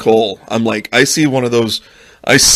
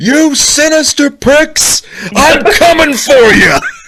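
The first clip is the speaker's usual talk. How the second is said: very high, drawn-out, taunting yell; 4 dB louder than usual. Retelling chasing squirrels from the backyard: imitating own yelling. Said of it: "I yell".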